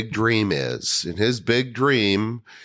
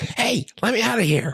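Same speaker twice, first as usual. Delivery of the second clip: tiny, very high little squirrel voice; 12 semitones higher than usual. Recalling a film character voicing a trapped squirrel, in a little squirrel voice. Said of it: "her little voices when she was voicing the squirrels".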